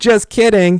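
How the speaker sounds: mock teasing tone, high and loud.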